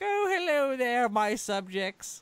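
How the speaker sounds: very high, slow, loud, stately royal voice. Voicing a cartoon Godzilla doing a royal wave: imitating the Queen. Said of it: "the Queen's wave right there. He was like".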